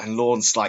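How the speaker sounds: ordinary talk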